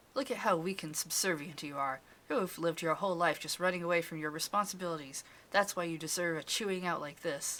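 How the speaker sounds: ordinary delivery, nothing marked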